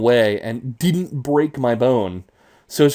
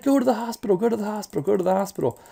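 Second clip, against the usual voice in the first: put-on frantic, tearful crying, higher and quieter; 9 semitones higher, 4 dB quieter than usual. Retelling a phone call with mom: imitating mom crying and freaking out. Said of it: "crying on the phone".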